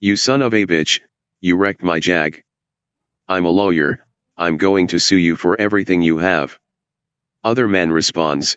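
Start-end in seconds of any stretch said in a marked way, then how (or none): none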